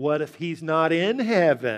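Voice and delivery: slow, snarky, mock sarcastic tone. Telling a joke, quoting a skeptic's reply, retelling a snarky remark. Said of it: "said in a kind of a snarky tone".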